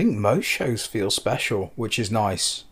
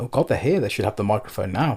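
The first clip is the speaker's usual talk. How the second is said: ordinary delivery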